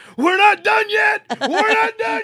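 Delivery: put-on very high, loud shriek, repeated twice. Retelling the moment the tail came through Bishop, the speaker re-enacts his scream. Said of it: "I just screamed".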